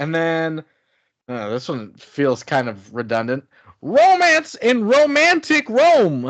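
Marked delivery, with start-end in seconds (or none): 3.8-6.3 put-on very high, slow, old-timey vintage announcer voice. Listing movie titles, announcing one in an old timey announcer voice. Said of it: "old timey announcer voice".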